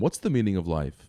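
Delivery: plain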